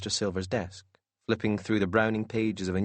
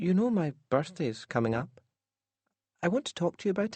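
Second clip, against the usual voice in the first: syrupy, sugar-coated, sickly sweet coaxing, very high; 10 semitones higher than usual. She speaks to her papa as he sips whiskey, in a sickly sweet voice. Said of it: "in a sickly sweet voice".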